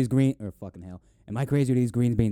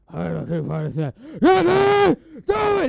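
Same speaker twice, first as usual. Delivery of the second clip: mock very high, drawn-out, rising scream; 14 semitones higher, 5 dB louder than usual. Retelling a movie character's lines, imitating someone screaming.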